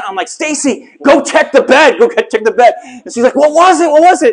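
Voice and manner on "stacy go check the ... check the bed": urgent repeated yelling from a distance. Recounting calling from the hallway after something stung their ankle, retelling a yell. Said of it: "I'm like yelling from out in the hallway".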